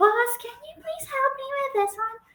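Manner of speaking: put-on very high, soft, babyish talking voice. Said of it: "she talks in, like, baby talking way".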